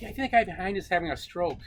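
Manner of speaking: mock sugary, high, sweet-natured voice. Retelling what the next guy in the row said, in a mock sweet voice. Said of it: "in a nice sweet voice go".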